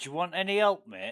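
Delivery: put-on friendly northern English accent. Retelling a stranger who turned up during a game stream, in a northern english accent. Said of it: "with a northern English accent".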